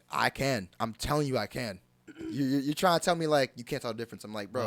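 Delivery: ordinary delivery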